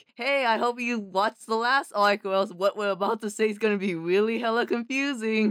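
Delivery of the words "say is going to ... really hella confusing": ordinary talk, nothing marked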